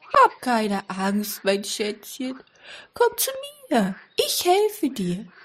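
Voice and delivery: put-on eerie, unsettling, swooping old woman voice. A voice calls to someone lost, offering help, in an eerie old woman voice. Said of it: "eine unheimliche Stimme".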